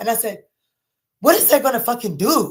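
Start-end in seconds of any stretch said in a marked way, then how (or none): 1.2-2.5 play-acted loud, furious, mad-as-hell outburst. Retelling a reply to a dad about backing the car in: retelling own furious reply. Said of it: "Mad as hell".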